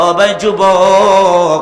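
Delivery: loud, very slow, stretched-out call.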